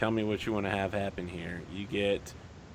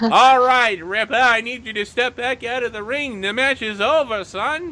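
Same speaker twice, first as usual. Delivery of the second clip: put-on very loud, high, old-timey Irish accent; 13 dB louder than usual. Describing the referee in a wrestling match, the speaker does an old-timey irish boxer voice. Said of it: "referee is like an old timey like Irish boxer".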